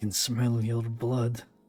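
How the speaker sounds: loud hissed words, hunger barely held back. He pulls his head away from the clay and looks at you, hissing out the words. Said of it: "barely restraining the hunger in his eyes as he hisses out".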